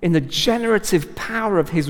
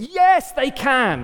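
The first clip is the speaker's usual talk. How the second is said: high-pitched, ringing, confident, declaring voice. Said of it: "I know that God thinks".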